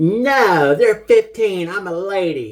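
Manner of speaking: grating, annoying high, loud voice with drawn-out "No". Speaker quotes a woman answering a friend about drink prices, imitating an annoying voice. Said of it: "she had a real annoying voice".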